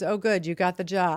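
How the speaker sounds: put-on flat, unenthusiastic tone. Retelling how she reacted to news of getting the job, mock-unenthusiastic congratulations. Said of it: "Totally less than thrilled".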